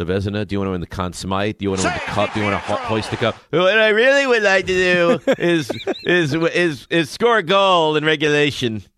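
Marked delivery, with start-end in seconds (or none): 3.5-8.8 loud, high, slow-witted drawl with words dragged out. Imitating the other speaker's answer about NHL goals: slow-sounding mocking impression of a friend. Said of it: "why does the impression of me sound like I'm".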